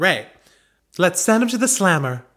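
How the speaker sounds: put-on American accent. Trying the agent's line again after being told: American accent.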